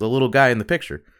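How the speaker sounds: bone-dry, matter-of-fact deadpan tone. Retelling someone in class answering the teacher's question, imitating a very dry answer. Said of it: "very dryly goes".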